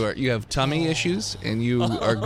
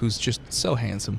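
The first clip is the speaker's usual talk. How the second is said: ordinary talk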